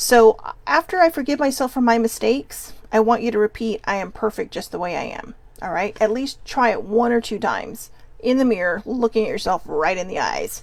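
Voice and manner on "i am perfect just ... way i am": plain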